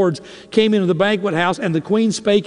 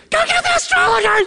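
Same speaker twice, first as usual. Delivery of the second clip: very high, frightened, scared shriek. Retelling a story, the speaker acts out the king's order: retelling a shriek. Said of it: "He shrieked".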